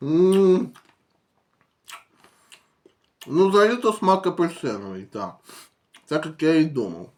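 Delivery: talking with mouth full, chewing. Tasting a snack on video, talking with mouth full. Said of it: "зараз дожую, проковтну і скажу".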